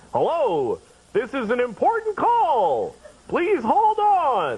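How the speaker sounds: sing-song automated robocall voice, like a recorded message. Describing a call received at home that put them on hold, imitating a recorded phone message. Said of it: "Have you ever gotten a call and".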